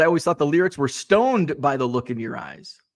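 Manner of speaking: usual speaking voice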